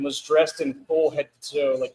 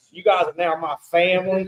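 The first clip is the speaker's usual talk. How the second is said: fake, mock Southern accent; 3 semitones higher, 4 dB louder than usual. Retelling what he said on the mic at an LSU basketball game, fake Southern accent. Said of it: "and he had the Southern accent".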